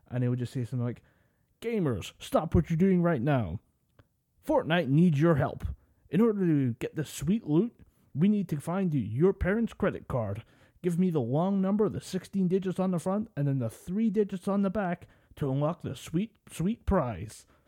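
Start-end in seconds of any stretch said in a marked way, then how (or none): 1.6-17.4 big booming, pitched-up macho American football announcer. Speaker mimics a gamer-announcement guy who sounds like a football announcer: big booming macho voice. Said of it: "he's got that big booming macho voice".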